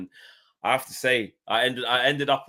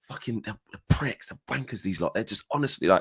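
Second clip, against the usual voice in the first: mock whisper-shout, hushed shouting. Speaker retells reacting in the mix zone where players walk past: retelling a whisper-shout. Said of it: "that whisper shouting".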